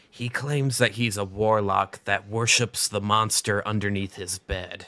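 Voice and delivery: hushed, confiding half-whisper. Voicing a character who leans over to the group: half-whispering. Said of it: "leans over to you guys and whispers".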